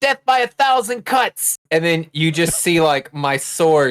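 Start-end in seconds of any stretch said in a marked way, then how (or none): 0.0-1.6 shrieking, very high anime battle scream. Playing a character attacking a monster, screaming like an anime character. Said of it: "I just start screaming like it's an anime".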